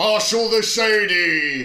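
booming high shout, "Shady" drawn out. Bluebeard, chasing you with a crowd of gnomes, in a booming shout. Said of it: "shouting at the top of his booming voice".

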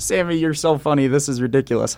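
put-on, mock-laughing, laughing-it-off voice. Retelling how Bobby reacted to being called a bully: imitating Bobby laughing it off. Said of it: "He's in there laughing like".

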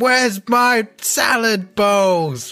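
acted-out furious yell, very high, very slow, drawn-out. Retelling shouting at the kids while cooking in a game: shouting like Gordon Ramsay. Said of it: "Gordon Ramsay kind of thing without the swearing".

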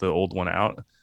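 ordinary talk, nothing marked

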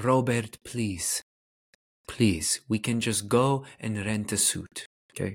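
attempted put-on Polish accent. Retelling what the speaker's mom said to them, imitating mom's Polish accent. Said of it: "my best polish accent".

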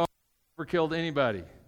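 plain

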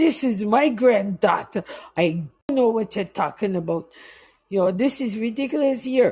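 put-on indignant Jamaican accent. A speaker retells her grandfather answering those trying to arrest them, in a Jamaican accent. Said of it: "my grandfather broke out in his Jamaican accent".

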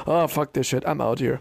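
ordinary talk

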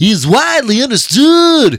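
very high, loud celebrity voice. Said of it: "I'm gonna do it in [name] voice".

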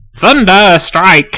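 high-pitched, shouted battle cry. Describing a creature hurling a lightning bolt, retelling a shouted battle cry. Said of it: "he just he shouts like".

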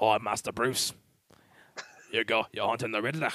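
put-on soft street British accent. Discussing the new Alfred, quoting his first line as an Andy Serkis Alfred impression. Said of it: "like a very like street British accent".

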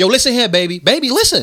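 high, condescending tone. Imitating how Mo'Nique calls people baby: imitating Mo'Nique, condescending. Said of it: "now it sounds condescending".

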